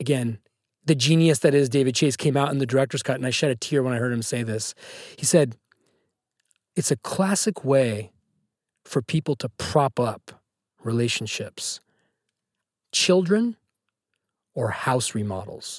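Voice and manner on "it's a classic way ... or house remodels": slow, grand, very dramatic, theatrical delivery. Speaker quoting a director's commentary, saying it very dramatically. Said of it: "I'm saying it very dramatically".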